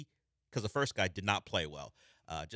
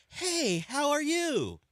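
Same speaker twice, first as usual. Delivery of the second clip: very high, very slow, drawn-out cutesy puppy talk; 5 dB louder than usual. Describing how John talks to an intern, doing John's puppy-talk voice. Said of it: "talk to her like a puppy".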